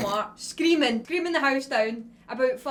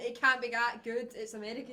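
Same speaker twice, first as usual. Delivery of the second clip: ordinary talk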